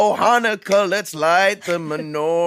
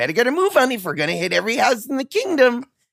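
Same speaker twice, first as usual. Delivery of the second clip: swooping, sing-song cartoonish character voice, wide pitch swings; 4 semitones higher than usual. Voicing a character heading off to visit houses: Olaf voice. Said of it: "Olaf's voice coming out of your face".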